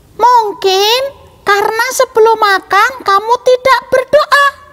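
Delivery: tiny character voice, very high and small. Telling a story, an unknown voice speaks up in a small voice. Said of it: "kemudian kita akan pakai suara kecil".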